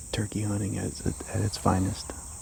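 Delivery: hushed whisper, barely audible. Narrating a turkey hunting video, whispering.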